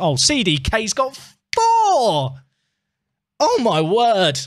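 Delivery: voice cracking with excitement. Celebrating a good goal while playing, voice cracking with excitement. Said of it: "my voice is cracked".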